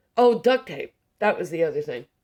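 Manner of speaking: ordinary delivery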